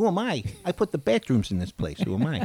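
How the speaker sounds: high character voice, pitch pushed up and swooping. Doing an impression after naming a favourite comedy movie: Joe Pesci impression. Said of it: "that's another great impression".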